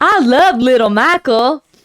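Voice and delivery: slow, drawn-out, deliberate big man's voice.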